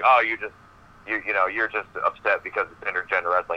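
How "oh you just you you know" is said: usual speaking voice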